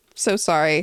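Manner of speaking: put-on sad tone. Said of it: "head sadly".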